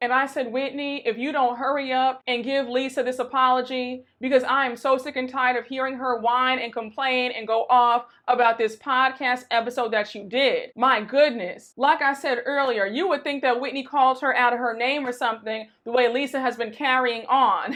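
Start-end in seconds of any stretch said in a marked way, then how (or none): none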